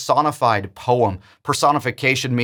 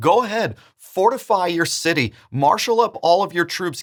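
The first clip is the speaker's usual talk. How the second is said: play-acted scornful taunting, pitched up; 6 semitones higher than usual. Retelling God's words to them from the chapter: retelling a mocking tone. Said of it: "he tells them in a mocking tone".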